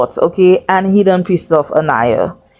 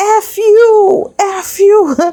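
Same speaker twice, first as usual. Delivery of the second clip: mock very high slow shriek, "you" stretched long; 14 semitones higher than usual. Retelling the girls shouting at the Casa girls: imitating screaming. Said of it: "So they started screaming".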